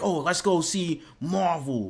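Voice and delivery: put-on very slow, self-assured, confident delivery. Retelling what another speaker suggested earlier, imitating someone saying it confidently. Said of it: "You said that with confidence".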